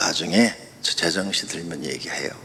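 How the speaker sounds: low, dropped voice. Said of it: "이렇게 낮춰라".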